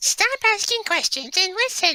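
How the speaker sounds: put-on very high-pitched little girl voice. Taking a turn at trying voices after another speaker, young girl voice. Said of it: "Let me try".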